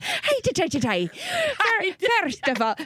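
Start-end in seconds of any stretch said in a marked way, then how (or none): 0.0-1.1 put-on Irish accent, higher pitch. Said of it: "I have to do an Irish accent".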